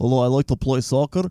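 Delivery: accent gradually drifting into a Russian accent. Doing a footballer impression that drifts Russian: Ibrahimovic impression turned Russian. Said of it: "he turns Russian when I do it".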